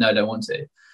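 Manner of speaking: mock tearful voice. Retelling refusing to ride further on a bike trip: retelling own crying. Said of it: "breaking down into tears and being like".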